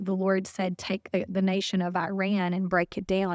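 ordinary talk, nothing marked

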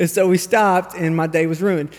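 plain

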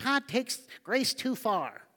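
mocking nerdy voice, high-pitched and slow. Speaker mimics the people who accuse the speaker, in a mock nerdy voice. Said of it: "Why do I make that voice?".

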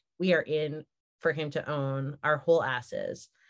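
normal talking voice

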